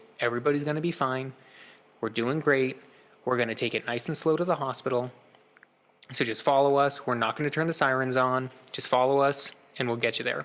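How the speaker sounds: ordinary talk, nothing marked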